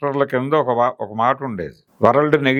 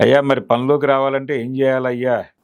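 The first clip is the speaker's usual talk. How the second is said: ordinary delivery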